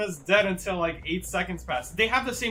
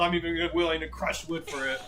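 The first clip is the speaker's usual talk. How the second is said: ordinary delivery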